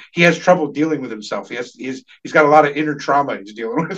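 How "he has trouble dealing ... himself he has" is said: usual speaking voice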